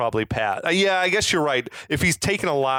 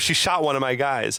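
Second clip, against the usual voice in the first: plain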